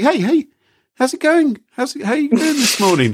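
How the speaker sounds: cheerful, bright-pitched friendliness.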